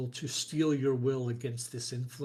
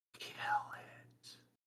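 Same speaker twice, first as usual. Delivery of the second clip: hushed whisper, close to the ear; 9 dB quieter than usual. Game master voicing a voice in the player's ear as they reach for the cage, whispering. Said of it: "a voice whispers in your ear".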